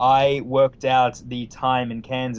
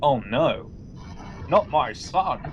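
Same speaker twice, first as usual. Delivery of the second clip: sad, heartbroken, very slow, distraught lament; 3 semitones higher than usual. Retelling the scene where Mystique finds files on Nightcrawler, mock-distraught Mystique. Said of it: "was that a Nixon impression or a McKellen impression?".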